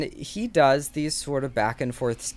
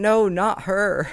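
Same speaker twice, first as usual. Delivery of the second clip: high, tearful voice broken by sobs; 5 semitones higher than usual. Retelling a girl in the stands looking at the two of them: imitating a girl sobbing.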